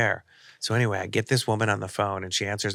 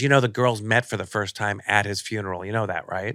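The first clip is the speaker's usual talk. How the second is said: plain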